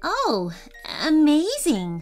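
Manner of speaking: confused. Narrator reads Eddie answering his grandpa: confused, not amazed. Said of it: "he sounded more confused than he did amazed".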